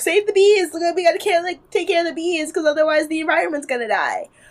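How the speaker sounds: put-on high, gushing girl voice. Describing herself as a bee-loving type: imitating a save-the-bees girl. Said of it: "I'm like the girl who's like".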